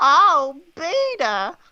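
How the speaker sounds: high, loud call, B swapped for P. Improv game, playing a character who swaps letters for B: Lois from Family Guy voice. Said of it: "replaces random letters with the letter B".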